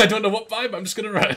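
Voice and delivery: loud, high, laughing, excited panic.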